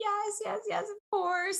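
very high, teary, tearful mock crying. Retelling accepting a marriage proposal: retelling own crying answer. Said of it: "And I'm crying, crying, like".

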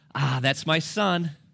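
put-on proud, slow, swelling fatherly voice. Retelling what dad said, hearing his son scream: imitating a proud dad. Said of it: "with all the pride he could muster".

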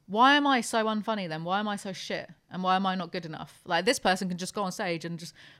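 ordinary talk

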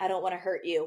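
silky, smooth, easy-going delivery. Retelling a contestant's reply while his date pours her heart out: imitating Ashton Taylor's smooth tone. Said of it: "such a, like, like, smooth tone".

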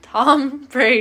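booming, full-volume, very loud shouting yell.

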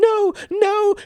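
very high, loud, terrified wailing scream. Narrator reading a story as the thin man faces a gun, screaming in terror. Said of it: "he screamed".

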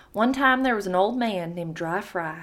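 Southern US accent, read-aloud storytelling delivery. Reading a story aloud to a co-host in a Southern American accent. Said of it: "I will, again, have to read this in a Southern accent".

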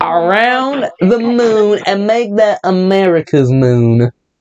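slow mock Texan accent. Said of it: "stop with the Texan accent".

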